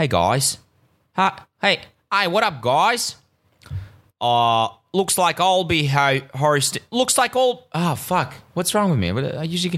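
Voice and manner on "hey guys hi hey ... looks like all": slow, struggling, stumbling, bad Australian accent. Repeating an Australian friend's message, in a botched Australian accent. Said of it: "I'm really not getting this Australian accent today".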